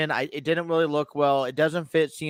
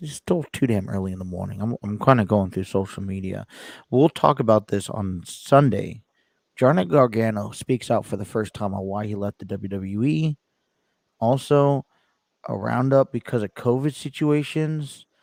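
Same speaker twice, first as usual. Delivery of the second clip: quiet low voice, near whisper, lower; 5 semitones lower than usual. Opening the show too early in the morning, speaking softly near a whisper. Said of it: "Why are we whispering to start the show?".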